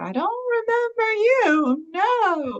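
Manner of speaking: put-on very high, very slow old-woman voice. Retelling what a voice said during a visit: imitating an old lady voice. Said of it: "I heard an old lady voice and she was like".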